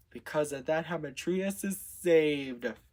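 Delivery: plain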